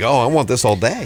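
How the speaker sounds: ordinary talk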